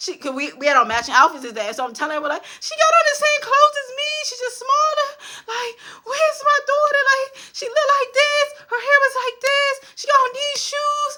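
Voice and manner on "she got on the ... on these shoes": very high-pitched, frantic, panicked tone. Retelling describing the missing daughter to people: retelling own panicked pleading. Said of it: "I'm panicking".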